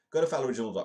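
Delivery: loud, high sales-pitch delivery. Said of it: "this is my normal shilling".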